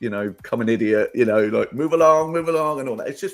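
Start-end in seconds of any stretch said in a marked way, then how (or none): 1.7-2.8 goofy, loud, high fake American accent. Retelling what he says when no one knows it's him, put-on American accent. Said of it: "I put on an American accent".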